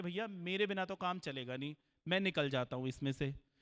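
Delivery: normal talking voice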